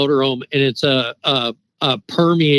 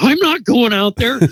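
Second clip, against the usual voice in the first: put-on high-pitched, frightened, fearful voice; 10 semitones higher than usual. Retelling how his wife answered him: imitating a frightened reply. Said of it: "looks at me in total fear and says".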